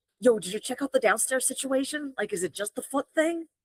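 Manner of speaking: stage whisper, loud. Pulling another character aside to ask a question: stage whisper. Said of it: "more like a stage whisper".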